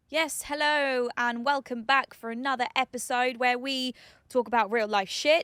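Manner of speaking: peppy, energetic put-on podcast-intro host voice. Podcast co-host opening a new episode for listeners, in an energetic podcast-intro voice. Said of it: "What voice are you putting on?".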